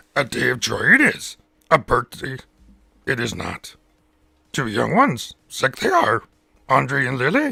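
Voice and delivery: very loud, booming, swooping puppet voice. Shouting out a chat member's daughters on request: Yoda voice. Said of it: "I can do Kermit or Yoda".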